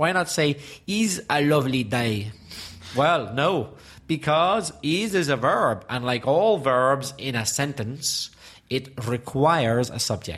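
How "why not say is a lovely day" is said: put-on Spanish speaker's accent in English. Speaker explaining English grammar, demonstrating in a put-on Spanish accent. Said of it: "I'll put on my Spanish accent".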